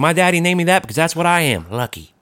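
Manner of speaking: put-on child character voice. Quoting a kid's catchphrase: imitating Lucky Schneider. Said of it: "that's his big phrase".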